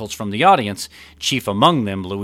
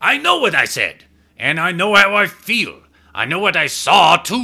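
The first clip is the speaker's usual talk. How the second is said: very high, loud, worked-up, fired-up outburst; 10 semitones higher, 6 dB louder than usual. A captain interrupts the defense attorney, fired up. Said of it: "a now fired up Luigi".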